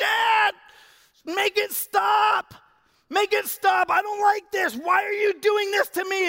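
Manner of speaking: put-on very high, loud, slow drawn-out child yell. A father retells his son yelling at him during stitches, imitating Matthew yelling. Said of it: "he's just yelling at me".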